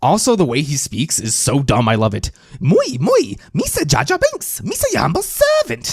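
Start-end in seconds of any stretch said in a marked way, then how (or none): 2.6-5.9 very high, dopey, goofy voice, swinging pitch, broken English. Speaker reacting to a movie clip, doing a Jar Jar Binks impression. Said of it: "I can do an impersonation of Jar Jar all day".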